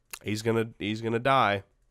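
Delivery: ordinary talk, nothing marked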